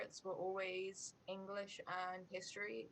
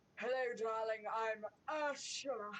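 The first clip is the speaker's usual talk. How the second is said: loud, slow, over-the-top, drawn-out delivery; 3 semitones higher, 5 dB louder than usual. Imitating how the character says her own name in the movie: exaggerated Ursula voice. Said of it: "I feel like she's like".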